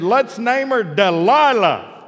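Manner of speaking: put-on loud, high little-girl voice. Parent retelling what their young child said in the back seat, imitating Whitney's loud voice. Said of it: "in that loud Whitney voice".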